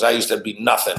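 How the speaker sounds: mock righteous lecturing tone. Retelling the condo manager going off at another man: imitating a righteous authoritative voice.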